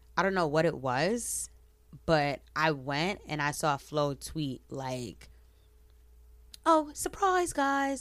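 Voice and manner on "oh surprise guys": very high put-on British accent. Speaker retells a tweet announcing an EP, in a UK voice. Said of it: "in like a UK voice".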